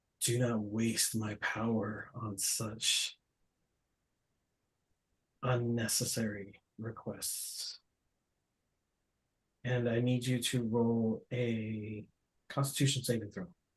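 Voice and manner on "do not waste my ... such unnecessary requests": slow, measured dragon-god voice. Voicing a dragon god who refuses a request: voice of Bahamut. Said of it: "you hear the voice of what you think is Bahamut".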